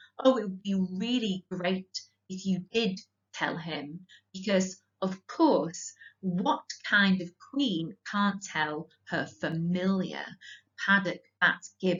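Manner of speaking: ordinary delivery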